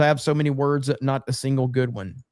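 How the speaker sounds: ordinary delivery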